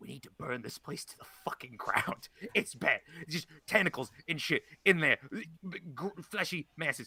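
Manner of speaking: soft stage whisper under the breath. Recounting going over to the doctor after walking out, whispering. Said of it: "Like I'm whispering this".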